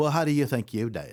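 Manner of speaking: bad, failed put-on English accent. Quoting what a blunt critic would always say: bad English accent. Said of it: "that was supposed to be my um my English accent".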